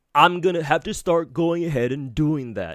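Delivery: contemptuous, scornful, sneering mock voice, parroting. Reacting to a video, mocking how the speaker in it talks: mocking imitation of Saint. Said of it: "you see how these fucking rats talk?".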